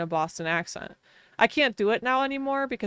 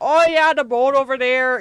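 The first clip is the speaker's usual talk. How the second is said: loud, over-the-top, exaggerated Wisconsin accent; 5 semitones higher, 8 dB louder than usual. Imitating drunk Wisconsinites out on a lake: exaggerated Wisconsin accent. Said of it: "drunk Wisconsinites together out in the summer".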